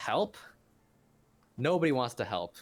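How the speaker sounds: high, loud, furious angry outburst.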